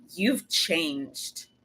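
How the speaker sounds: put-on low, patronizing tone oozing contempt. Speaker recounts what a woman said to them; mimicking a condescending tone. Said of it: "in a very condescending, patronizing tone and manner".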